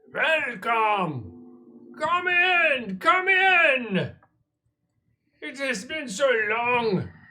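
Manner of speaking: very high, booming, resounding call-out. Narrating the tunnel scene, voicing an unseen figure: booming voice calling out. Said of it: "A booming voice calls out".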